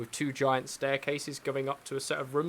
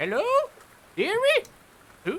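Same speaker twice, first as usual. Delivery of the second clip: put-on very high, sing-song, swooping elderly lady voice; 8 dB louder than usual. Retelling a story where an old lady greets the speaker, old lady voice. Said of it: "And this this old lady sort of looks up at you".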